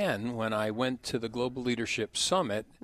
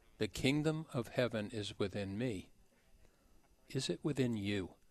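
hushed, soft, half-whispering voice; 6 dB quieter than usual. Retelling what a speaker said at a summit: Mama Maggie's half-whispering voice. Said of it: "in her very whispering voice".

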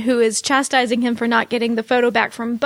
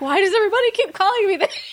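play-acted, high, exasperated, frustrated, fed-up tone; 8 semitones higher than usual. Imitating a character who keeps getting called the wrong name: imitating frustration. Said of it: "raises his hands in frustration".

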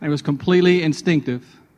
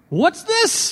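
put-on hammed-up British accent, very high pitch; 14 semitones higher than usual. Speaker retells a pastor holding up the ball he dropped, in a big British accent. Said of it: "said in his biggest British accent".

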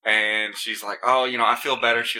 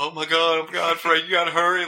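mock angry, high, pissed-off urgent outburst; 6 semitones higher than usual. Retelling a woman in the car urging Frank to hurry: imitating someone getting pissed. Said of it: "Like she's getting pissed".

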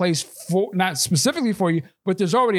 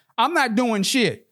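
mild mock crowd-style call, high, slow, drawn out; 5 semitones higher than usual. Retelling what protesting people shouted with hands up: imitating people shouting.

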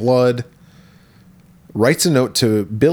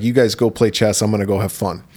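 ordinary talk

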